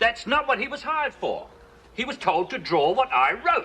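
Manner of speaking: furious, very high-pitched yelling. Writer fuming that the illustrator changed his outline, shouting angrily. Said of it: "if you're going to shout at me".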